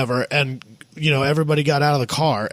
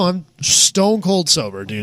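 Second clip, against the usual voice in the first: ordinary talk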